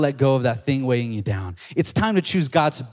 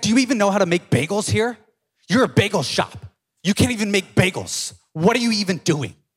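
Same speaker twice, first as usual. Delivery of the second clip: acted, bitter, indignant, pitched-up angry rant; 7 semitones higher than usual. Retelling a woman's complaint to bagel shop staff, imitating an angry customer. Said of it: "She angry".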